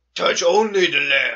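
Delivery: put-on creepy cave voice. Quoting what the game's creepy cave says, deep creepy cave voice. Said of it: "the really deep voiced creepy cave".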